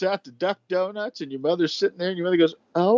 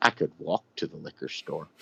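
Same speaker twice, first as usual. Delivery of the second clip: breathy, utterly matter-of-fact whisper; 7 dB quieter than usual. Retelling what a mother said about the liquor store: imitating a matter-of-fact voice. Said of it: "in the most matter-of-fact voice I've ever heard".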